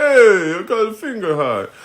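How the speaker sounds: clumsy put-on Italian accent. Thanking a viewer for a finger heart: bad Italian accent. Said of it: "that was a bad Italian".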